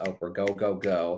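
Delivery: ordinary talk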